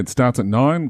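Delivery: ordinary delivery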